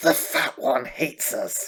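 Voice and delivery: hissing, hissed-out creature voice. Retelling what his wife would always say for the cat: Smeagol voice. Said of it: "in the voice of Smeagol".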